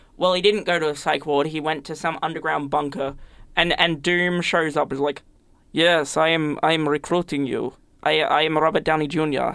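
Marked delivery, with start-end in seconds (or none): 5.7-9.6 slower, vague, put-on Eastern European accent. Retelling a movie scene where Doom recruits Bruce Banner, Doom's vague Eastern European accent. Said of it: "I am doing a very vague Eastern European accent".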